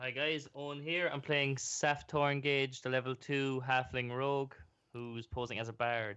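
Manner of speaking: flat, bored, very low monotone drone. Introducing himself and his character at the start of a game session, bored monotone. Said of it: "You sound so bored every time you say that".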